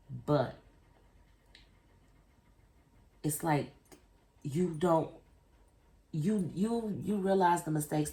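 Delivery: stuttering. Talking about a friendship that something more could tear apart, stuttering. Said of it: "I apologize for the stutter".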